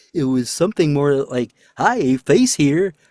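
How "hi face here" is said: put-on cartoon character voice. Voice actor recalling the first voice tried for a role, a voice like Barney. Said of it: "the first voice I did was closer to the character Barney".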